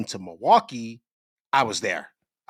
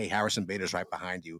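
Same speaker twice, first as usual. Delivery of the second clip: very hushed, very quiet stage whisper; 5 semitones lower, 9 dB quieter than usual. Retelling how someone half-whispered a warning at a restaurant: imitating a half-whisper. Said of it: "kinda whispers and says".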